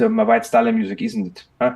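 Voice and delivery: heavily laid-on fake Austrian accent. Retell what the man said over a beer, in a fake Austrian accent, imitating Florian. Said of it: "I'm now faking this Austrian accent".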